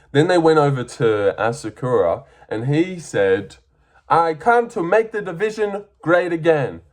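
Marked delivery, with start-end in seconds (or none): 4.0-6.7 put-on Japanese accent, pitched up. Retelling what Asakura said when they went over to him: Asakura impression with accent. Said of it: "Let's not do an accent actually".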